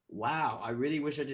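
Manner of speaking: plain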